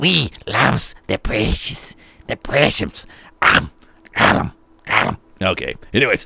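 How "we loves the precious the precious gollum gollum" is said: very low, dropped-down creature voice. Joking about loving something, going like Gollum. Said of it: "like Gollum going".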